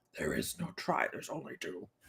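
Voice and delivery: hushed, breathy, barely voiced put-on whisper. Quizzing listeners on a Star Wars quote, speaker delivers it in a Yoda voice. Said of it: "That's my best Yoda voice".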